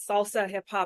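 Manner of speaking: normal talking voice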